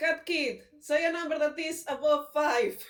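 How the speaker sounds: loud, high-pitched yell in character voice. Voicing a character calling out to Cat Kid: yelling in character. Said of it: "he's gonna yell randomly".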